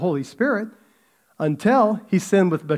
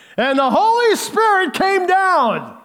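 mock preacher voice, very high, slow, slightly louder; 12 semitones higher, 4 dB louder than usual. Retelling a preacher's joke, imitating a preacher saying it louder. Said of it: "says a little louder".

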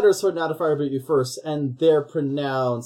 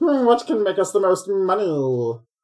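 made-up alien cartoon voice; 3 semitones higher than usual. Describing how the stuff they discuss would get adapted, Marvin the Martian voice. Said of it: "it was getting a little Martian Manhunter".

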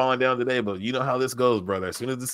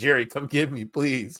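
mock begging, pleading put-on voice. Retelling how he ran into the locker room calling for Jerry; retelling a begging plea. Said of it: "He begged".

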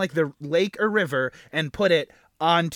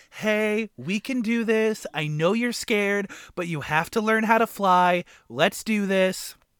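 very gentle, soft coaxing voice; 3 semitones higher than usual. Recapping a scene, the speaker acts out Tinker Bell coaxing a scared fairy, mock-gentle Tinker Bell voice. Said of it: "being super gentle".

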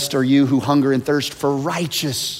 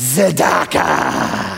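tzedakah said with grand, rough, rasping creak; 3 semitones higher than usual. Showing how the word must be said: like Mufasa. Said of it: "Kinda like Mufasa".

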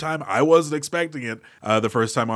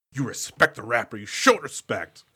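all worked-up, insistent, agitated delivery; 2 semitones lower, 3 dB quieter than usual. Retelling the movie scene where Grant scolds the kid: Alan Grant freaking out. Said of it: "Grant's gonna start to freak out".

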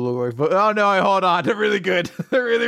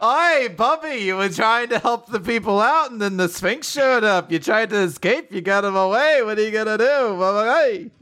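put-on old woman voice.

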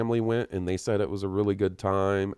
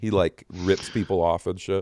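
normal talking voice

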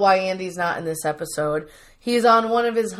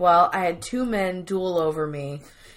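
ordinary talk

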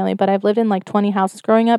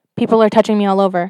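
ordinary delivery

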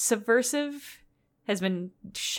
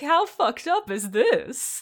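high, slow, drawn-out droning voice; 7 semitones higher than usual. Voicing the drone as it busts in, in a Hedonism Bot-type voice. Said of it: "I love that voice for the drone".

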